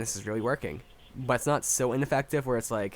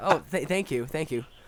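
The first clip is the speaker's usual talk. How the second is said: mock insincere, half-hearted tone, higher pitch; 3 semitones higher than usual. Acting out thanking overly helpful people: imitating an insincere thank-you. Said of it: "But do you ever mean it, though?".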